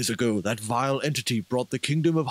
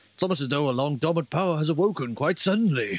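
lofty, grand, grandiose delivery; 3 semitones higher than usual. Voicing a game character after being asked to, in the grand voice. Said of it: "you can do the grand voice again".

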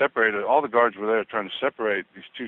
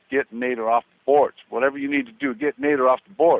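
yelling with swooping pitch; 4 semitones higher, 3 dB louder than usual. Retelling a coach yelling at a player during a timeout: imitating Hubie Brown yelling. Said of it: "the whole timeout he's yelling at Lonnie Shelton".

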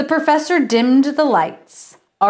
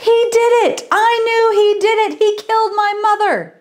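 very high, shrieking, screamed outburst; 11 semitones higher than usual. Narrator reads Hank leaping up from his chair to accuse someone: screaming. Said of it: "Hank leapt up from his chair and screamed".

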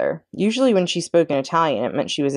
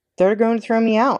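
said on a sigh; 6 semitones higher than usual. To a friend who came to check on him, he answers, sighing. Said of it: "sighed Chester".

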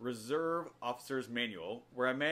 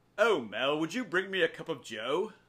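loud, snooty, posh put-on British accent; 4 semitones higher, 6 dB louder than usual. Asking mel for a cup of joe, snooty british accent. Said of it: "Try saying it in a snooty British accent".

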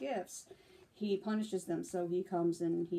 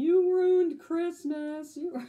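mock, drawn-out, shrill, very high, loud sobbing wail; 10 semitones higher, 10 dB louder than usual. Retelling what two people said while crying at a movie: imitating someone crying. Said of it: "they were crying in the middle of the movie".

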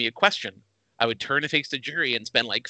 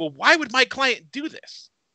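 put-on very high, exasperated, frustrated voice; 10 semitones higher than usual. Retelling a question asked in front of the jury: imitating a frustrated questioner. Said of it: "he's so frustrated".

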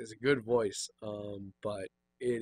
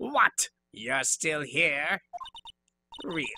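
put-on strained raspy voice, pitched higher; 6 semitones higher than usual. At the studio's main gate, she confronts the player: raspy put-on character voice. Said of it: "and it's a crying shame that you use today to say what you please about poor old ladies. ... But her voice is the reason I, right now, am raspy. I am now allowing all of the stress from this recording to hit my voice because I no longer need it. And it is almost entirely from that bitch".

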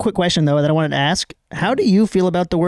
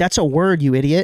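ordinary talk, nothing marked

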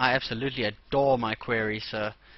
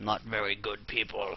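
small, soft put-on alien voice; 3 semitones lower, 7 dB quieter than usual. Gathering wood and stone, the speaker answers their own question in a little alien voice. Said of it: "my little alien voice self".

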